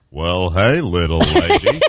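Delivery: easygoing western cowboy drawl, very slow and drawn out. Doing an impression after being asked, as a guessing clue: John Wayne impression. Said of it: "Can you do an impression of him for her?".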